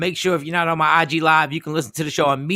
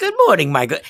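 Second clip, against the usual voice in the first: put-on pleasant, inviting woman's voice, faster. The speaker imitates Shawnee greeting him in the morning, pleasant and inviting. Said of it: "she has a very pleasant and inviting voice".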